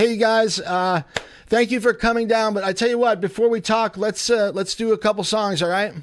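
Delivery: very high, loud, high-pitched calling-out yell. Calling to the band in the other room: yelling to another room. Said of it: "I'm yelling 'cause they're in the other room".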